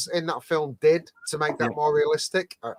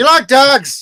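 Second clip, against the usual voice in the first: very high, loud, put-on Irish lilt; 9 semitones higher, 13 dB louder than usual. Chatting with friends about favorite films, the speaker asks a question in an Irish accent. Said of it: "you literally just went with a, a, an Irish accent".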